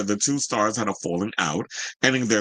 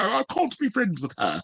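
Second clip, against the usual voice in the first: put-on British accent, pitched very high; 10 semitones higher than usual. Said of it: "whatever that fucking British accent he does".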